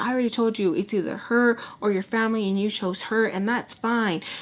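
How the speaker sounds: heated, screaming argumentative tone. Retelling a woman answering him in the argument: imitating someone screaming. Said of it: "So they're screaming".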